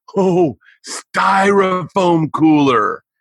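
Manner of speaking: stage whisper, projected to carry. Retelling what he said to his buddy Eddie during a silence, in a loud whisper. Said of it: "in a loud whisper".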